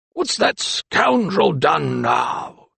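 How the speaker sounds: gravelly, rough, creaky, irritated growling grumble. The old anatomist asks what the lawyer has done now, growling. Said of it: "he growled".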